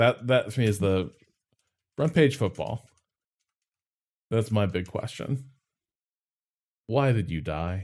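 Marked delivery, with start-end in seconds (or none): 6.9-7.8 sad, mournful, sorrowful voice. Talking with others about old sports video games, sad. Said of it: "you sounded so sad".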